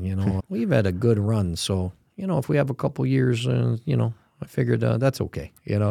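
put-on Upper Midwest accent. Quoting one of the guys, in a Fargo–Green Bay accent. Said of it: "that was a pretty good accent you did there".

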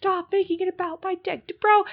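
mock, very high-pitched, shrill, angry yell. Acting out what a man yelled at someone, retelling a yell. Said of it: "he's like yelling at Hannah".

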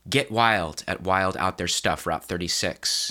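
ordinary talk

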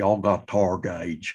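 put-on broad, heavy East Tennessee accent. Recalling starting a new school in Nashville, quoting their younger self in a strong East Tennessee accent. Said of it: "I had a good, strong East Tennessee accent".

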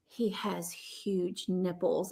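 slow, drawn-out, hushed mutter, almost half-whisper. Retelling what Dustin said upstairs: imitating an almost-half-whisper. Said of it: "almost whispers to himself".

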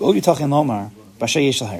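ordinary delivery

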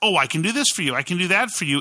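cliché salesperson pitch voice. Showing the trap of trying to convince people: stereotypical salesperson voice. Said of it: "you sound like a stereotypical salesperson".

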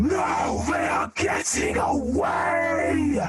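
inhuman screaming creature. Voicing a creature in the doorway with inhuman screams. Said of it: "horrible screams, inhuman screams going".

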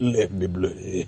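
mimicked deep female voice. Telling Taylor how a woman said it, imitating her deep voice. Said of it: "She got a mad deep voice and said it like that".

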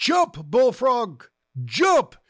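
loud, high-pitched yelling.

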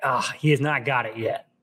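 mock sigh, acted out. Retelling a woman's reaction in a scene, imitating a sigh. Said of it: "she sighs like".

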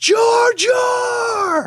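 loud, high-pitched yell.

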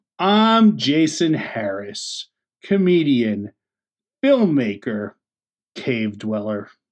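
very slow, low delivery, every word drawn out. A podcast co-host introducing himself after his partner's intro, speaking very slowly. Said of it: "are you speaking very slowly there".

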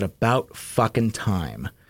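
very quiet, hushed aside, under the breath. Retelling a remark leaned over and said during a movie: imitating saying it very quietly. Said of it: "very quietly said".

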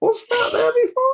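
very high, squeaky voice. Describing a scene from Invisible Man, doing a squeaky Julia Roberts impression. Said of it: "That's my impression of Julia Roberts".

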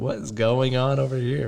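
ordinary delivery

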